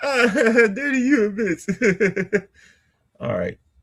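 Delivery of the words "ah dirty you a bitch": high-pitched, slow delivery, laughing through the words. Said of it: "If you be like".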